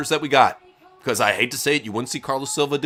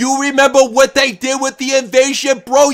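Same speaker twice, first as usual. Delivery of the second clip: very high-pitched, loud screaming, urging tone; 11 semitones higher, 8 dB louder than usual. Retelling what Vince Russo screamed at Tony, imitating Vince Russo screaming. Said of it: "that's what Vince was screaming at him".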